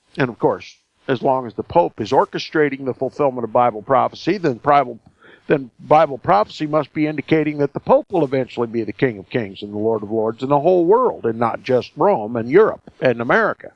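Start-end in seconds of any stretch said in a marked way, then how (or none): 5.5-9.2 rushed, very fast delivery. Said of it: "Maybe I'm talking too fast".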